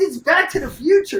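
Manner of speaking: high, loud, blurted exasperated voice.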